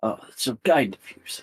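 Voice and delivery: put-on kindly, calm, nice old gentleman voice. Voicing a nice calm old man greeting a visitor: calm old man voice. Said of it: "Nice, calm, old man".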